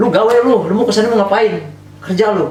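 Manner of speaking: high, loud nagging scolding tone.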